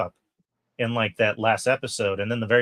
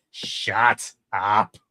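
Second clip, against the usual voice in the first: put-on cartoon villain voice. Retelling a line from the show the way Magneto says it: imitating Magneto's delivery. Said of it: "Just the way he says it".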